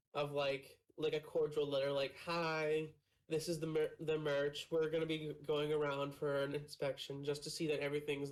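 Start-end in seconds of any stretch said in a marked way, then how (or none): none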